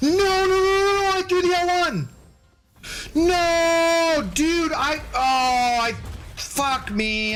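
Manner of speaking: very high, panicked, stretched-out "no" repeated. Reacting after throwing the L one by mistake: panicking. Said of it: "I'm just panicking now".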